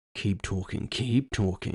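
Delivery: tense hiss through gritted, clenched teeth. Reading a story aloud, the narrator answering a taunting killer: hissed through gritted teeth. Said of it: "I hissed through gritted teeth".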